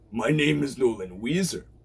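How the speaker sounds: salty pirate-captain voice. Presenting characters one by one, the speaker demonstrates Nolan: Nolan's pirate voice. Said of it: "he sounds like this. He's a pirate character".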